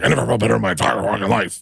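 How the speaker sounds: rough, creaky, rasping showman voice, big delivery. Retelling what Dana said about his health kick, sounding like Vince McMahon. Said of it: "You sound like Vince just then".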